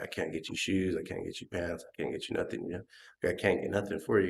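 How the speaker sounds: worried, stressed-out voice at its limit. Retelling a mother's worried words about money: imitating stressed-out mom. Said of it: "stressed out".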